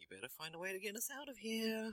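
put-on under-breath mutter. Recapping a scene, quoting a man's reaction, retelling an under-breath mutter. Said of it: "He's just under his breath going".

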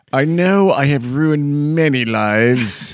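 very loud, very slow, exaggerated, over-the-top fake remorse. Acting out a pretend public apology to the mall: over-the-top mock apology. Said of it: "I would go so over the top in that apology".

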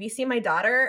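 ordinary delivery

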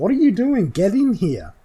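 shrill, booming, very loud, high, swooping yell. Voicing a ghoul scientist calling from the vault entrance: yelling. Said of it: "Keely, yells out".

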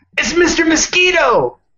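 very high, over-eager put-on excited voice. Reading out a viewer's message on the podcast: put-on excited voice. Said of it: "Good impression".

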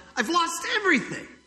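furious, very high, angry shout. Retelling the angry man looking at his ruined house: angry shout. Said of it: "he just shouts out".

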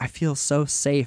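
plain

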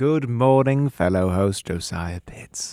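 put-on, affected transatlantic old Hollywood accent. Greeting the co-host at the start of the podcast: put-on transatlantic Hollywood accent. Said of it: "What is that accent?".

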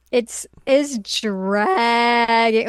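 voice cracks while saying "dragging". Complaining that a story arc is dragging, speaker's voice cracks. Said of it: "Oh, my voice cracked".

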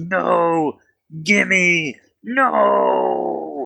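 very high, rough, roaring dragon voice. Voicing a dragon that roars over its lost goblin: dragon roaring. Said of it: "the dragon just roars and goes".

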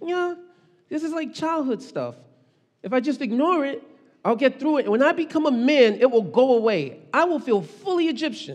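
put-on high childlike voice. Imagining Moses's thoughts as a child, the speaker does a kid's voice. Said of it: "do like a kid's voice".

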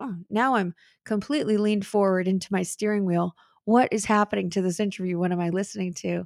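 plain

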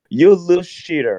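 acted-out shouting, voice way up high, scolding tone. Retelling shouting at a kid in the street: retelling a shout. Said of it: "I was just shouting at him".

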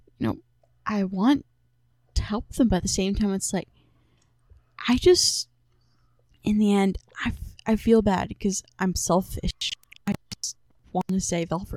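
character voice spoken through a sigh. Speaking in character as Flint, sighing. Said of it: "Flint kind of sighs and goes".

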